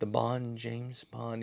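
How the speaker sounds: very hushed, mousy, rehearsed half-whisper. Imitating Brosnan's rehearsed Bond introduction: quiet half-whispery Brosnan Bond delivery. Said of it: "very quiet and then kinda whispery".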